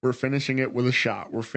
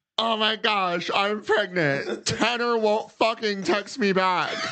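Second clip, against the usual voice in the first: put-on very high-pitched reality-show teen voice; 9 semitones higher than usual. Mocking the other side of reality TV teens: imitating a pregnant reality show teen. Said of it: "And then on the other side".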